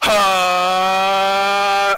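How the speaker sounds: high, loud, stretched-out cry with held "ha". Retelling how a friend imitated Fox charging an attack: Fox charging a smash attack. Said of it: "Fox charging up his, like, Smash attack".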